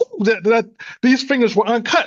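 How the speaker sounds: high, excited exclamation. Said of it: "I was just excited".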